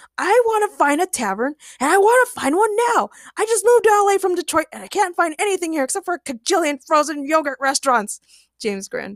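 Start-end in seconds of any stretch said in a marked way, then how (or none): 0.2-8.2 full-on, high-pitched, insistent screaming. Reading a fanfic aloud, voicing Ray refusing a bar: screaming. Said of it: "screamed Ray".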